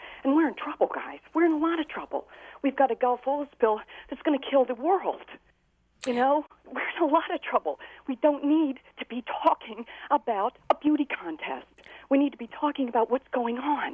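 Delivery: exasperated, fed-up, frustrated outburst. The guest answers the interviewer's question, frustrated. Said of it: "I can certainly hear the frustration in your voice".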